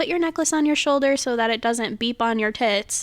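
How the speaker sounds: plain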